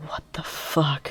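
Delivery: soft, hushed whisper under the breath. Retelling a reaction behind a mask while someone pays: imitating own past whisper.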